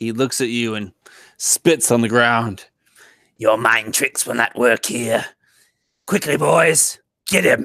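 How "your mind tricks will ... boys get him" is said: goblin gang-boss voice, contemptuous. Game master voicing a goblin who spits on the ground at the players, goblin voice. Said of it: "A goblin of disgusting proportion. / A goblin of disgusting proportion. His nose is massive and warty. He has sharp and jagged teeth. He wears a red tunic with a bandana wrapped around his head. You s".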